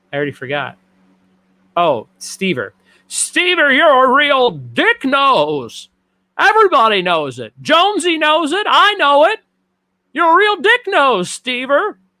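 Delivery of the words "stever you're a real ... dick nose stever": very high, swooping put-on voice with stretched nasal sound. Asked to call someone a dick nose, doing a Jimmy Stewart voice. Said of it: "can you call him a dick nose in your Jimmy Stewart voice?".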